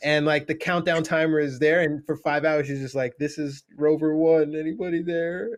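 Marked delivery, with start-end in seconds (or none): 3.2-5.6 put-on, slow, tearful sobbing voice. Retelling a movie scene of a man calling over the radio: imitating someone crying. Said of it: "And he's just, like, crying".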